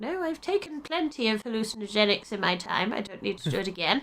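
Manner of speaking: put-on dotty, demented old-lady voice. Retelling how they refused an offered vision: playing a demented old lady. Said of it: "Sort of playing the demented old lady".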